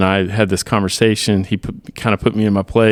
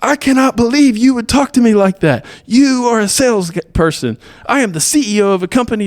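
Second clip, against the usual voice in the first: put-on screaming rant, higher pitch; 4 dB louder than usual. Retelling how the caller reacted on the phone: imitating someone screaming. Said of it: "he just started screaming at me".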